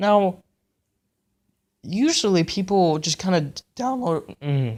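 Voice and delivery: slow voice, cracking and breaking mid-word. Talking to viewers in a video about prop making, voice cracking. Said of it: "Sorry for the voice cracks".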